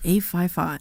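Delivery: very low, put-on, sultry, seductive voice. Reading out the call-in phone number: put-on sexy voice. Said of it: "We gotta do the sexy way there".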